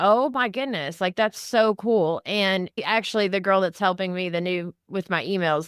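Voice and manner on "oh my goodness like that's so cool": ordinary delivery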